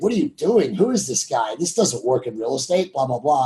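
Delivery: ordinary delivery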